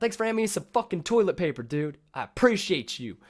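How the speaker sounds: aggressive, very high, very loud and shrill. Acting out somebody coming up with a thank you: mock aggressive thank you. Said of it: "Just an aggressive thank you".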